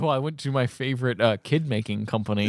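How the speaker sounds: ordinary talk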